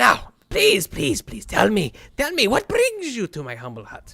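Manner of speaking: put-on high, swooping, sing-song old woman voice. Voicing Nayra, sitting down and asking the visitors' purpose: voicing Nayra, an old woman. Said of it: "she says".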